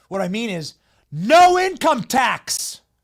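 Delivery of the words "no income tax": very loud, high-pitched, thrilled excited yelling. Explaining a newly announced tax policy, excited yelling. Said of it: "Sorry to yell. I'm excited".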